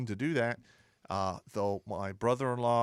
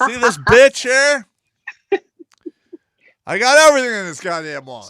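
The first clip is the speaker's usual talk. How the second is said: shrill, very loud yelling; 12 semitones higher, 18 dB louder than usual. Showing off his wallet while the other speaker tells him to stop: yelling. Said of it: "Stop yelling".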